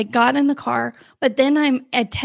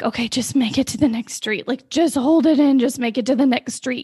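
mock urgent, desperate, begging pleading. Retelling holding it in on a drive home: imitating own desperate pleading. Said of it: "pleading with God".

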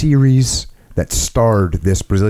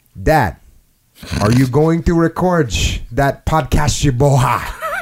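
high, broken, fake Portuguese accent; 6 semitones higher than usual. Retelling what his son said to him, in a broken, fake Portuguese accent. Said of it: "in a broken, imitated, fake Portuguese accent".

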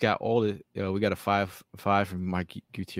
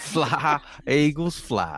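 put-on Southern accent, much higher; 5 semitones higher, 4 dB louder than usual. Signing off the show after being told to say it in a Southern accent. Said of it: "Should say that in a Southern accent".

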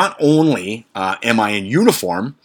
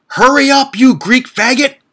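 shrill, very high-pitched, loud screaming outburst; 6 dB louder than usual. Retelling what a driver screamed from his car: imitating someone screaming. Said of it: "he screams out".

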